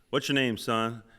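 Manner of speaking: usual speaking voice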